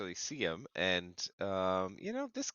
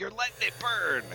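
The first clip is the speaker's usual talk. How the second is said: shrill, very high yell; 11 semitones higher than usual. Shooting an arrow at an enemy in character: yelling in character. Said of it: "I yell".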